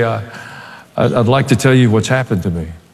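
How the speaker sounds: soft, gentle, quiet voice. Retelling how Brad stopped the music at a rock concert: imitating Brad's gentle, quiet voice. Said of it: "in this gentle, quiet voice".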